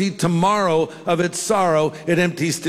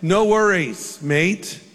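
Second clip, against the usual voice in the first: crumbling, put-on Australian accent. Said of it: "my accent's falling apart as I do it".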